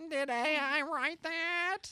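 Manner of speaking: very high, comic sitcom-style nerd voice. Joking with others about AI writing that sounds soulless, asking a question in the Urkel voice. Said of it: "in the Urkel voice".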